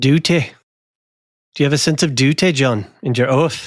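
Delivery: put-on Northern English accent. Voicing Cregan asking about duty and his oath: Jamie Tartt accent. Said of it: "I was trying to do the Northerner accent".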